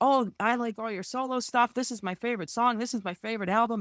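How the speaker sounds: rushed starstruck gushing. Retelling what they said on meeting a musician they admire, retelling rushed fast talking. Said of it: "everything came pouring out so fast".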